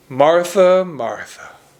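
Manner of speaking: play-acted weary, disappointed, reproachful tone. Reading a rebuke to martha: exasperated, disappointed tone. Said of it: "I just sense this exasperated tone".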